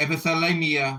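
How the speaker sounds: plain reading voice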